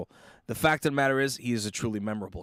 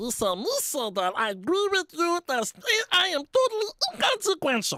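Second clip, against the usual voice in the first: very high put-on voice, swinging pitch up and down. Answering whether the character matters, in a Jar Jar Binks voice. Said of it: "for you to do a Jar Jar voice".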